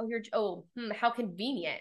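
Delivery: plain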